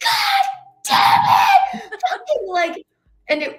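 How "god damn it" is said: shrill, very loud, high, furious screaming outburst. Telling Mickey about a petty fight, retelling screaming like Mickey. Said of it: "I started screaming like you".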